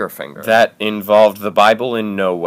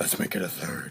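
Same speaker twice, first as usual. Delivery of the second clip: menacing, scary whispered demon voice; 5 semitones lower, 17 dB quieter than usual. Speaking to the other person, in a scary demon voice. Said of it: "Did that scary demon voice come from you?".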